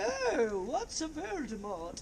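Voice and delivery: put-on high, slow English accent.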